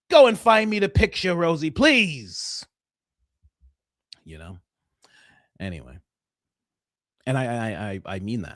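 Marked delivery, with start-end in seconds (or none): 0.1-2.6 mock demanding, bossy voice, higher. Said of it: "I could do that voice in those type of bits".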